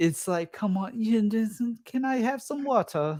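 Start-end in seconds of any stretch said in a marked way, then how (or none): 1.8-3.2 high, put-on, laid-on-thick British accent. Mimicking someone who isn't British putting on a British accent. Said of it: "start talking with a British accent".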